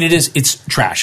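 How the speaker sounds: ordinary talk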